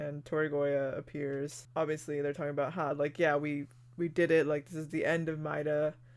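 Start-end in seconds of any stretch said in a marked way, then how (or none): none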